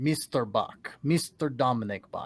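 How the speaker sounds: put-on foreign accent, not German. The host turns to talking about Dominic Bach, in a put-on foreign accent. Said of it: "I'm saying that in an accent that isn't German".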